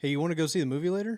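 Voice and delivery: voice climbs at the end on later. Explaining how questions sound in English, demonstrating rising question intonation. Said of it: "And it kind of goes up at the end".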